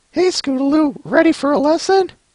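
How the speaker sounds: very high cartoon character voice. Reading a comic aloud and redoing a line: retried character voice. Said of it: "get the voices in my head".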